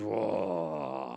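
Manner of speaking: startled, low, creaky, grunting monster voice.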